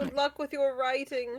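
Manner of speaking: British-sounding, slightly European accent. Wishing the other speaker good luck with their writing, sounding very british. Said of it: "You sounded very British there".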